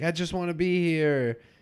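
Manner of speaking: acted sobbing, weepy, high, tearful crying. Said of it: "he's crying".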